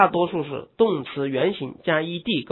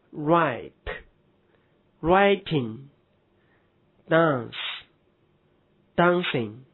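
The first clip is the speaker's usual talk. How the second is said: very slow, careful English pronunciation of words. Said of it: "如".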